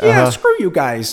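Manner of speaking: very loud, high-pitched hollered yell. Showing how everybody imitates Steve Johnson: imitating Steve Johnson's higher voice. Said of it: "everybody does Steve like this".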